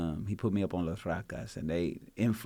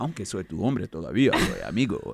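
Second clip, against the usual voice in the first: loud, swooping, sing-song Spanish sports announcer voice; 6 dB louder than usual. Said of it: "I want it to sound like a, like a Spanish announcer".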